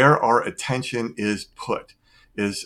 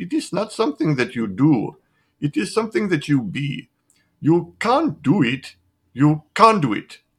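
bad put-on Indian accent, much higher; 5 semitones higher than usual. Quoting a teacher's advice, in a terrible Indian accent. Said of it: "That's my terrible Indian accent".

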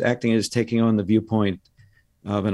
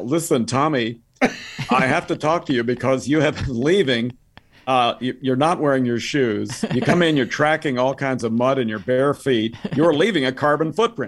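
perturbed, complaining tone, rattled off fast; 3 semitones higher than usual. Imagining a complaint to Tommy Lee Jones at Harvard, imitating a perturbed Al Gore. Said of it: "Al Gore being perturbed by Tommy Lee Jones".

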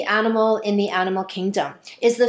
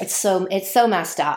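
ordinary talk, nothing marked

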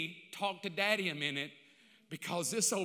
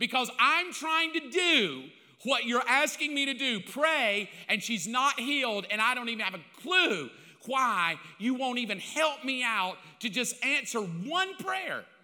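exasperated, frustrated raised voice, said straight out; 5 semitones higher, 6 dB louder than usual. Retelling own past prayer complaining that she is not healed: retelling own frustrated prayer. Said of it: "But I was just frustrated with him".

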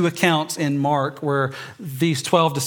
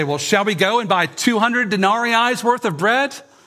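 dry, sarcastic, pitched-up jab; 6 semitones higher than usual. Retelling the disciples' response to Jesus: imitating a sarcastic reply. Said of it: "more than a hint of sarcasm in their response".

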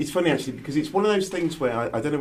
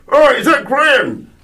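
put-on loud, high, broad-voiced Irish accent calling out; 11 semitones higher, 14 dB louder than usual. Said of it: "I hear this Irish voice go".

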